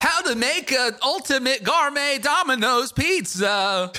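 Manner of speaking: very high short-video narrator voice. Reacting to a pizza screen grab, the speaker does a TikTok impression. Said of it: "I'll do my best TikTok impression".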